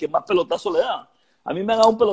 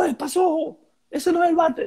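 put-on very high, shrill shout; 11 semitones higher than usual. Retelling how someone shouted at him about his bat, retelling a shout. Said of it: "el Duque me gritó".

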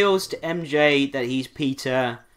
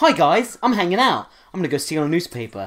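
movie-hero voiceover narration; 3 semitones higher than usual. Mocking the film's opening narration: stereotypical Spider-Man voiceover. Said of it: "stereotypical Spider-Man voiceover".

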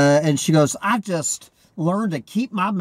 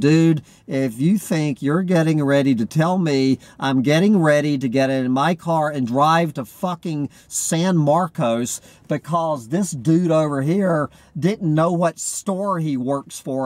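usual speaking voice

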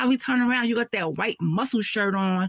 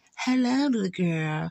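put-on creepy voice, pitched lower; 3 semitones lower than usual. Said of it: "He sound mad creepy".

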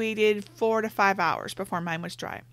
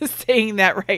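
laughing while speaking, louder; 8 dB louder than usual. Giving painting advice, the speaker checks a word, laughing at own word.

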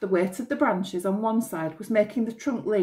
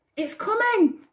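eager, excited burst, pitched very high; 13 semitones higher, 4 dB louder than usual. Narrator reading Barney's line as the tree starts cracking, excited. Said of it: "said Barney excitedly".

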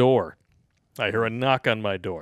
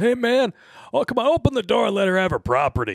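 mock shouted pleading, high-pitched yell; 9 semitones higher than usual. Retelling how a man yelled at the speaker to open the door: retelling a yell. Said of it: "So he yells".

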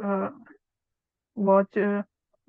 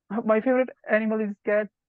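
ordinary talk, nothing marked

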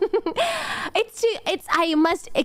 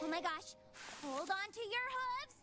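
put-on hushed, very quiet little Valley Girl voice; 2 semitones higher, 21 dB quieter than usual. The speaker voices a character's line in a Valley Girl voice. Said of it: "I'm going a little Valley Girl with it".

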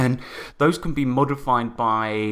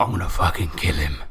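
low, enraged, growling voice. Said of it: "he's just enraged".

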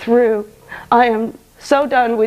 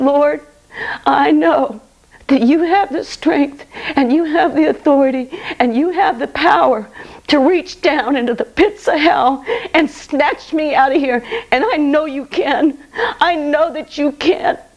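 put-on earnest, desperate, begging pleading; 4 semitones higher than usual. Retelling begging Jesus on knees to be saved: retelling begging. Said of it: "I just begged him one last time".

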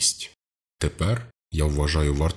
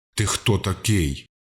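restrained, mild roaring voice; 4 semitones higher than usual. The colonel, pistol drawn, confronts the frightened Mark: roaring. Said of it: "заревів полковник".

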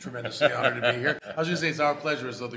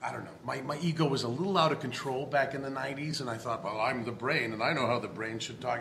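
ordinary delivery

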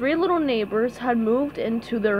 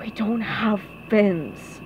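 hushed whisper; 3 semitones lower than usual. One neighbor corrects another while a villain threatens their house: whispered. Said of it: "Squidward whispered".

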